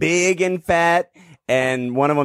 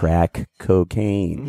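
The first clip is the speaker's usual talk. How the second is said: put-on whisper, lower; 6 semitones lower than usual. Retelling what a friend said into the ear: imitating a friend whispering. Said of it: "he whispers in my ear".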